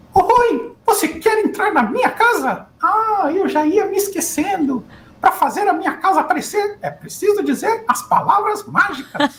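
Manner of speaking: very high pitch, slow pace. Retelling talking to a young son on the phone: Mickey Mouse voice. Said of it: "era o Mickey que tava conversando com ele".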